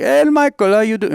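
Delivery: put-on South African accent. Retelling an older man's greeting: imitating a South African accent. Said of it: "I don't know a good South African accent".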